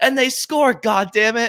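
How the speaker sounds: very high, loud, passionate broadcaster goal-call yell. Retelling a high school hockey broadcaster's call of a tying goal: imitating a passionate goal call. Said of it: "He's like".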